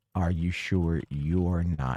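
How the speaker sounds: deep, soft, low put-on voice. Describing a film scene where a man's sister speaks, in a deep voice. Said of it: "says in a deep voice".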